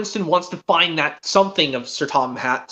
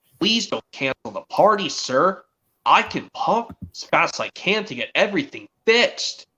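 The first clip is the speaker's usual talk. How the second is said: ordinary talk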